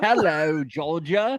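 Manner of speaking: put-on cheeky British-accented voice. Imagining a reality star as ship captain: Harry Jowsey impression. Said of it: "And he's like".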